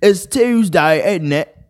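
put-on British accent. Reading "British people be like" memes aloud: mock British accent. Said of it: "British people be like".

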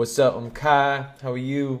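put-on flirty guy voice. Recounting a recorded meeting, the speaker imitates Kai's put-on sexy act.

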